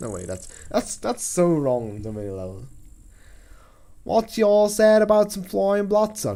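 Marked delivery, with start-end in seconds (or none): 4.0-6.4 loud put-on cartoon character voice. Reading a story aloud, trying to voice a line as Applejack. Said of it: "I'm trying to channel my inner".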